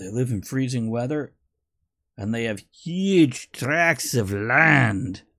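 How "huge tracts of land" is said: bad put-on Scottish accent, "land" drawn out. Quoting Monty Python mid-discussion, in a botched Monty Python accent. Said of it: "it was a Scottish accent they did".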